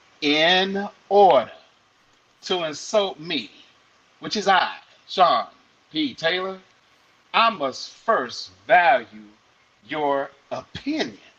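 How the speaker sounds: slow, deliberate, careful spelling-out, word by word. Repeating a quote so people in the back get it: speaking slowly. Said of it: "let me say this slowly".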